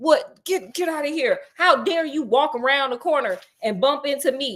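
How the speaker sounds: mock-angry outburst, shouting. Retelling a man attacking a girl who bumped into him, mock-angry outburst. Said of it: "just stomping her like".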